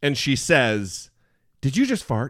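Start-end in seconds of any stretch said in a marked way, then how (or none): 1.6-2.3 put-on sour, resentful, angry, bitter, accusing tone. Retelling a friend asking at a wine bar: imitating Brittany angry and bitter. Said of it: "with an angry, bitter face".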